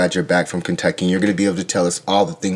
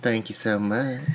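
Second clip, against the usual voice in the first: fake southern Kentucky accent; 4 semitones higher, 8 dB quieter than usual. Answering a greeting and joining in on a Kentucky accent: put-on Kentucky accent. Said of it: "this is how I talk".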